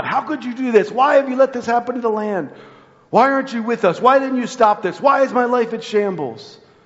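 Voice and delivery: mock furious high angry yelling outcry. Speaker acting out people yelling at God, imitating angry yelling. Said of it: "and they're yelling at God".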